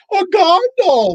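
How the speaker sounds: put-on grand, stagey shout, very high-pitched. Telling how a short man on a chair called across a convention floor, retelling a big theatrical yell. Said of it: "in this big theatrical voice, he yells".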